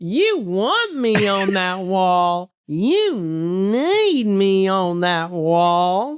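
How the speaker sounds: very slow, dragged-out delivery, need stretched out. Showing how Tyler does the wall speech: imitating a friend's Jack Nicholson impression. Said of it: "he says it like this".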